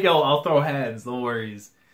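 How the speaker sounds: ordinary talk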